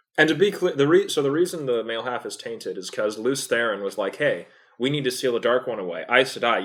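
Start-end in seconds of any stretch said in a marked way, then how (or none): none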